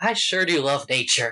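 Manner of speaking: with a sigh. Narrating a woman looking over a prairie at sunrise, voicing her line, sighing. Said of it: "And she sighs and she says".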